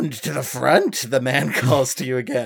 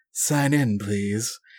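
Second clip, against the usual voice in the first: low, scratchy, raspy woman's voice; 3 semitones lower, 4 dB quieter than usual. Narrator voicing the woman in the lodge lobby addressing the players, low raspy woman's voice. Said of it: "That's raspy, right?".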